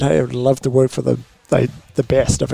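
ordinary talk

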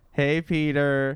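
slow, drawn-out, drawling voice. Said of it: "we say it like that".

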